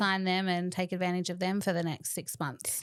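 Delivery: normal talking voice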